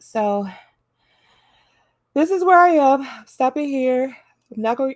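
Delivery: talking through a yawn. Speaking to viewers, some of whom are just getting up, talking through a yawn. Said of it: "I'm trying not to yawn".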